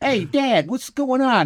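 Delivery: put-on very high-pitched Brooklyn street accent. Imitating a family's little brother who talks like a Brooklyn deli worker: Brooklyn deli accent. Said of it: "he's straight out of Brooklyn. Like he works in a deli".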